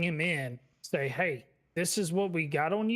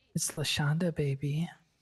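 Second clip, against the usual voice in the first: put-on creepy voice. Recalling a prank call made to a friend, a speaker repeats it in that creepy voice. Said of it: "that's that creepy voice you called me in".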